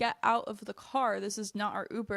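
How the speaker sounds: usual speaking voice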